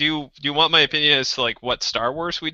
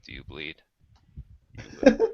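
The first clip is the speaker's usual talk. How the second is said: hushed, dead-serious whispered voice; 12 semitones lower, 5 dB quieter than usual. Asked for a serious one, the speaker tries a line in a quiet Batman voice. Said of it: "I'm gonna get really quiet".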